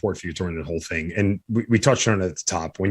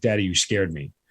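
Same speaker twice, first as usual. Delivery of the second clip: put-on crying, tearful child voice. Father describing how his kids react when he screams, imitating a crying child. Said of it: "the first thing they do is cry".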